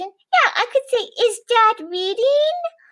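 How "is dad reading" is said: questioning tune climbing upward on reading. Showing how a question sounds when asked, with rising question intonation. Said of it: "See how my voice goes up like this".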